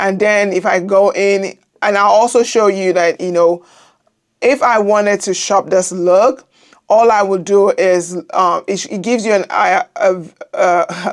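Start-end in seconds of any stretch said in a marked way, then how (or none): 6.9-11.1 halting, stumbling, stammering speech. Showing viewers how to shop a look, the speaker starts stuttering. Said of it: "now I'm start, stuttering".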